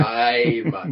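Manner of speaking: drawn-out Jamaican accent. Demonstrating how to pronounce the show's motif, long Jamaican accent. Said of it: "pronounce it with a long sort of Jamaican accent".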